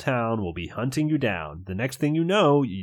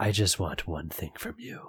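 breathed, much lower, quieter, faster; 5 semitones lower, 5 dB quieter than usual. Mr. ruderly, baring his fangs, tells you he wants one thing, breathed. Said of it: "He breathes".

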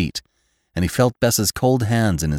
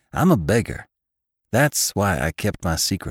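ordinary delivery

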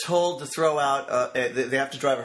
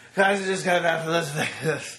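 coked-out slurred voice, words left half-finished. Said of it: "this is no exaggeration what it sounded like".

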